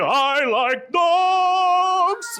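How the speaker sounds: very high excitement, "dogs" drawn out. Explaining a dice-roll game, showing how a roll of twenty sounds, maximally excited. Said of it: "if you get a twenty, you'll be".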